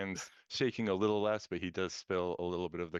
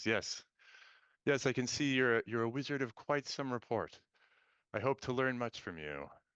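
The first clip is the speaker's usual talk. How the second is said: shaken, awestruck, unsteady, pitched-up voice; 5 semitones higher than usual. Voicing a character who has just met a wizard, shaken, composure lost. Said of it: "he kind of shakes too and he goes".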